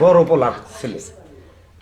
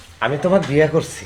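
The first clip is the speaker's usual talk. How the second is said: ordinary delivery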